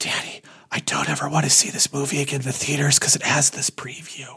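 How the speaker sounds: hushed, soft, breathy, private whisper. Retelling what a little girl told her dad: imitating a whisper. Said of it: "leans over and whispers to her dad".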